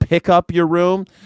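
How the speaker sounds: Midwestern father voice. Recalling things his father would say, imitating midwestern dad. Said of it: "He would say stuff like".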